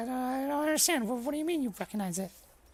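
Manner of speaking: put-on very high, anxious boy voice, nervous stammering. Voicing a boy confused that his family language is known: nervous boy. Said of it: "the boy looks a little bit nervous".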